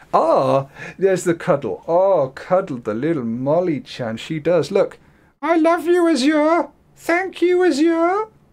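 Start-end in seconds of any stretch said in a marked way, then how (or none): 5.4-8.2 very high cutesy cat voice. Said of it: "my cutesy cat voice".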